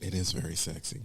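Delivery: very soft, slow, hushed half-whisper. Changing the subject while half-whispering. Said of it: "Why are we whispering like this?".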